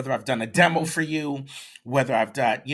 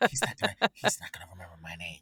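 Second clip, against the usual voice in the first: soft, hushed stage whisper, aside; 7 semitones lower, 6 dB quieter than usual. Retelling how a student whispered off to the side: imitating someone whispering. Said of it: "And she's whispering".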